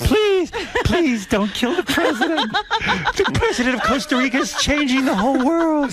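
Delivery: mock pleading victim voice, high and slow.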